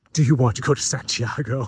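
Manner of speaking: grave, big and dramatic action-film style delivery. Retelling what a helpful woman asked that morning: imitating a dramatic tone. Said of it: "It was so dramatic".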